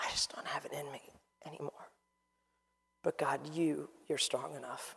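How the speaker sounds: soft, level, hushed whispered murmur. Acting out someone's tired, quiet prayer to God: imitating a whispered prayer. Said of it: "I've watched God answer whispers".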